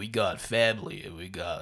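pitched way down, kept very soft. Tell of a video Vin Diesel posted on Instagram, doing a bad Vin Diesel impression. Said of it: "That was my voice. It's bad".

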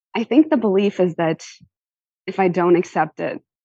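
tearful voice, welling up, on the verge of crying. Explaining the belief behind accepting little from people, about to cry. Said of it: "now I'm gonna cry again".

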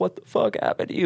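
mock sobbing, bawling outburst, very high and tearful. Retelling how the fiance reacted on seeing the swollen eyes: imitating someone crying. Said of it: "Like, straight crying, like".

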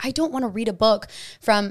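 normal talking voice

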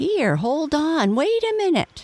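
very high cry with rising, climbing pitch. Narrator reading a father beaver calling to his son, crying out. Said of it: "cried Mr".

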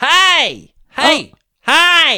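very loud, very high yell with swooping pitch. Showing how the speaker yelled hi to people across a field; imitating own yell. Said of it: "I had to yell at them across the field".

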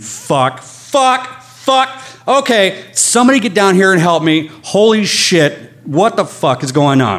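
full-on, high-pitched screaming. Telling the story of being hit and badly hurt, reenacting own screaming. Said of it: "And then I just start screaming".

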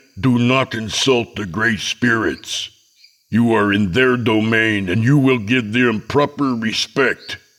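growling voice. Narrating the father answering a man who doubts the chief, growled. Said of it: "My father growled".

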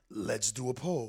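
very low, creepy horror villain voice. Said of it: "that's supposed to be my let's play a game voice".

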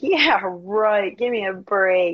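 laughing, dismissive mock scoff. Retelling a dream where the speaker laughed at the devil: retelling laughing scoff. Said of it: "And I'm laughing".

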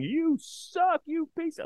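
play-acted very high, shrill, jeering yell. Retelling how players yelled at him from the dugout: imitating players yelling. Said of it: "just yelling".

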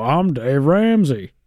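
terrible put-on radio voiceover voice. Mocking a bad voiceover by imitating the host: terrible Dave Ramsey impression. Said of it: "I do a terrible version of you".

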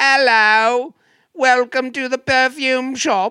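very high, booming, loud put-on London accent. Imitating a shop worker among London's characters: imitating a London accent. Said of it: "They were all giving London".

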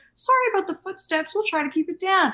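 acted sweet, professional voice. Retelling how Eric answers a complaining neighbor: imitating Eric being sweet. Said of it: "he'll just be so sweet and be like".

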